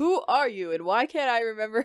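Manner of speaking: ordinary talk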